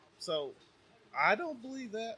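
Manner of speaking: voice breaks and cracks, very high-pitched. Talking on air about couples in the military, the speaker's voice cracks. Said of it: "did my voice just go crack?".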